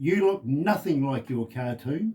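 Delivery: mock cross woman's voice. Retelling what a shopper at the supermarket said: imitating a woman speaking crossly. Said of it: "she looks at me very, very cross".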